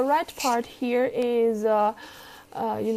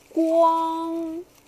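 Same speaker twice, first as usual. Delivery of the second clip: 光 in high level first tone, flat and steady; 6 semitones higher than usual. Mandarin tone lesson, first tone example: high level first tone on 光. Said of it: "the first tone is high and straight".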